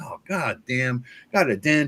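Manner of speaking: put-on annoyed grumbling. Retelling finding a dent in a book, imitating Tim Shorts complaining. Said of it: "I love hearing him bitch about it".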